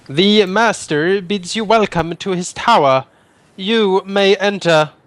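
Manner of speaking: metallic voice of a metallic orb. A game master voicing an orb answering the party's request to enter: metallic voice. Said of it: "a metallic voice can be heard emanating from it".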